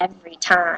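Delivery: put-on annoyed mutter. Retelling a bus ride, speaker imitates the driver muttering under his breath: imitating an under-breath mutter. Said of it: "he goes under his breath".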